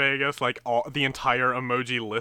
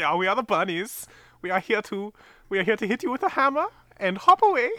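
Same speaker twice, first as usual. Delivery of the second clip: heavy, thick, put-on Swedish accent, much higher pitch; 8 semitones higher than usual. Describing whimsical Norse hitman bunnies and voicing them in a thick Swedish accent. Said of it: "they've got a very thick accent".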